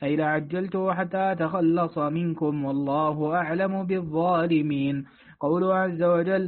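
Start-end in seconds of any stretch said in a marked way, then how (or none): none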